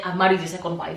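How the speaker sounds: ordinary talk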